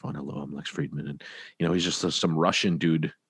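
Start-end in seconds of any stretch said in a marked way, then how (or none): 0.1-1.1 deadpan imitated voice, much lower and quieter. Show how this guy just talks in the microphone, with a deadpan Lex Fridman impression. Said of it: "I kind of just love how deadpan he is".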